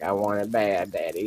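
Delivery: whimpering, whiny, crying, begging tone. Owner voicing his dog begging him, imitating his dog whining. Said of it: "he's just like crying and whining to me".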